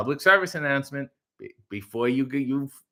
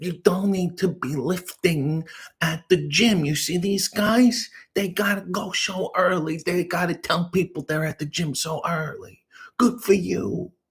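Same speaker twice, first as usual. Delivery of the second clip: higher-pitched, exasperated comedian rant voice; 4 semitones higher than usual. Doing an impression that berates a viewer's husband for being at the gym: Sebastian Maniscalco impression. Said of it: "this is my Sebastian Maniscalco impression".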